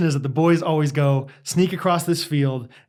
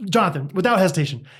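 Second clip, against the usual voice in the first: ordinary talk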